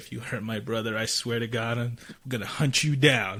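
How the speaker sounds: imitated whisper. Retelling a threat to the bride during a hug: imitating own whisper. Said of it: "I whisper in her ear".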